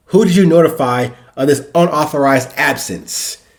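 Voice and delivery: ordinary talk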